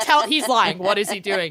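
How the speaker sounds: plain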